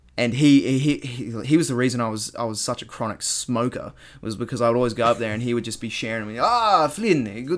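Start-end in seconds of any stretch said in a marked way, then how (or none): 6.4-7.6 put-on South African accent, higher and slower. Speaker recalls a South African guy who shared smokes with him, imitating Daniel's South African accent. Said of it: "do South African accent".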